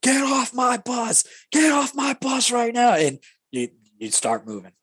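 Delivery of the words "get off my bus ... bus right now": put-on very high, hollered drill instructor yell. Retelling how the drill instructor opens the bus door, imitating him yelling. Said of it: "just starts yelling".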